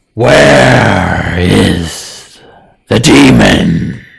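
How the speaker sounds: booming, very loud, very slow, drawn-out eerie disembodied voice. Voicing the fiend asking where the demon went: disembodied voice. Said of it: "with a disembodied voice".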